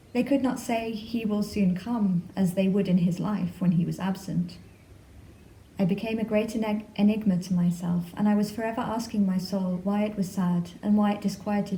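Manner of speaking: normal talking voice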